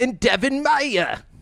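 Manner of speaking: high, slow mock Australian accent. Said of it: "I almost went Australian".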